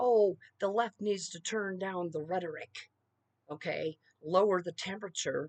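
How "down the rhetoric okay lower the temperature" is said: ordinary talk, nothing marked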